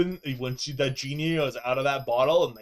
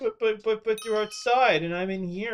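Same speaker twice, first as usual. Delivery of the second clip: high, needy whining dog voice; 8 semitones higher than usual. Voicing the dog left inside while the fiance is outside: voicing a needy whining dog. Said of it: "being all extra needy 'cause she's like".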